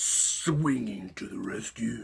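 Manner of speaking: terrible put-on superhero voice, slow, husky whisper.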